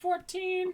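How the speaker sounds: very high-pitched character voice. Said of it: "doing the character voice to tell you numbers".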